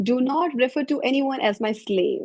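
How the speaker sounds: normal talking voice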